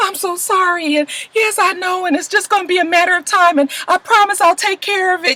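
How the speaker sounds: play-acted, tearful, high, crying, pleading voice. Retelling a scene where Marissa takes a phone call, imitating Marissa crying. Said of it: "all of a sudden she's crying like".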